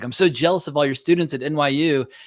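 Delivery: ordinary talk, nothing marked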